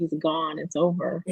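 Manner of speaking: ordinary talk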